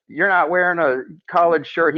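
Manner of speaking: heated, high-pitched scolding tone. Retelling how Dave stormed over and stopped the match to yell at a player, imitating Dave yelling. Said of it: "storming over there and yelling at Charles".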